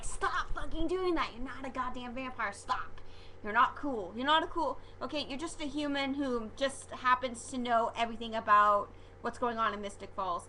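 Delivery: ordinary talk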